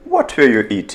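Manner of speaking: falling tune, dropping away on eating. Teaching English question intonation in the past continuous: falling intonation on eating. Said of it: "Интонация вниз".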